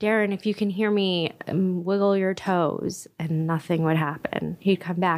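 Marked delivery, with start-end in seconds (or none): none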